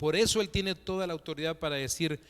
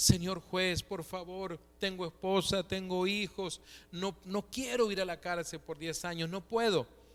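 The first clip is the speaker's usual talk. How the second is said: put-on tearful, sobbing, blubbering like a child; 3 semitones higher, 3 dB quieter than usual. Retelling a man pleading with a judge in a story, imitating a man crying. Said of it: "¿Por qué se pone a llorar ahora como un niño?".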